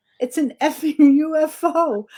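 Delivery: play-acted high, drawn-out, shocked scream. Retelling spotting a UFO overhead: retelling own screaming. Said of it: "and I start screaming".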